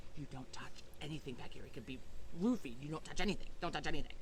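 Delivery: whispering voice. Retelling a car ride, the speaker re-enacts a whispered warning to a companion. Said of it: "and I whispered to him".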